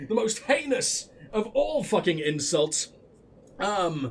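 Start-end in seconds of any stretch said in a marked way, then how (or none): none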